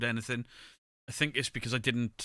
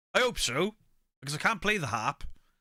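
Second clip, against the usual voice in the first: shouted, pitched high; 7 semitones higher, 3 dB louder than usual. Retelling a reply called out from the living room: retelling own past shout. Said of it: "And I shouted from the living room".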